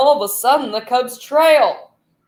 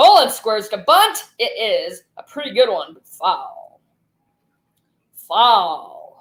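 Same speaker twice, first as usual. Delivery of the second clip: television sports commentator, play-by-play announcer voice; 2 semitones lower than usual. Demonstrating announcer voices during a baseball play-by-play: TV announcer voice. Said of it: "There's my T V announcer voice".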